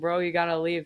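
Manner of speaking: ordinary talk, nothing marked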